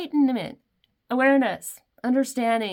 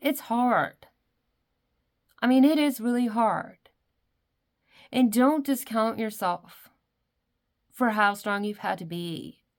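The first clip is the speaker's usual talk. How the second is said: teary-eyed, on the verge of tears. Speaking directly to whoever is listening right now: getting teary-eyed. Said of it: "And I'm getting teary-eyed here".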